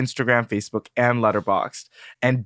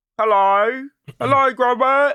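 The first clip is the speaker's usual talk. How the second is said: very high, calling-out voice; 10 semitones higher, 3 dB louder than usual. Friends taking turns at the voice, one calls out for Gromit: Wallace voice. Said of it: "That's pretty good".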